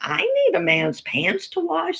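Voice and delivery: very high, scornful, swooping sing-song with disdain. Retelling what a grandmother said about remarrying: imitating grandma's disdain. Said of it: "she said it with great disdain".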